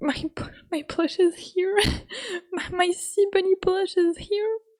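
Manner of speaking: tearful, weeping voice. Speaker talking to their sea bunny plush, crying. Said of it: "I'm I'm crying".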